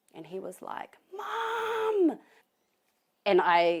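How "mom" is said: loud, high-pitched screaming. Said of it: "I could hear him on the other end of the phone screaming my mom's name".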